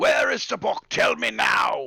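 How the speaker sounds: enraged, rasping, rough, furious shouting. Game narrator voicing a furious character demanding an answer: angry screaming. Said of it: "And he's screaming".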